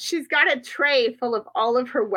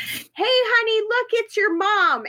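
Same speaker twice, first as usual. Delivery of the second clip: put-on very high, long-held, drawn-out yell; 10 semitones higher than usual. Retelling how the fake husband yells across a class performance: imitating a man yelling. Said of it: "her fake husband yells".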